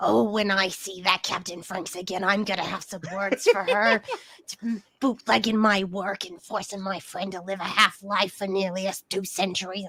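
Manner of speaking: low grumbling mutter under the breath. Playing the character Mag, talking to herself: muttering under her breath. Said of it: "just like muttering under her breath".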